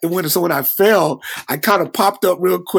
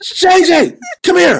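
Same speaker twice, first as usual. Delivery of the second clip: very high scream, stretched out very slowly; 12 semitones higher, 6 dB louder than usual. Retelling how they screamed to someone across the stage: retelling a scream. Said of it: "And I screamed out".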